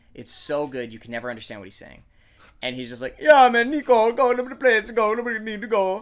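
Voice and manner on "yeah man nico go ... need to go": put-on very loud, pitched-up shout in Jamaican accent. Speaker quotes Jacob from Grand Theft Auto IV talking to Nico, in Jacob's Jamaican accent. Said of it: "he's got this amazing Jamaican accent".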